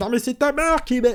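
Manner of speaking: high, goofy, silly, idiotic put-on voice. Quoting women's rude replies to messages they received: silly dumb put-on voice. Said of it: "pourquoi je fais cette voix débile".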